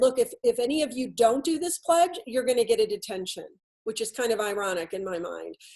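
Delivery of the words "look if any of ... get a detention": mock strict, severe, stern teacher voice. Retelling a teacher pointing at everybody over a pledge, imitating a stern voice. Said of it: "with a real stern voice and said".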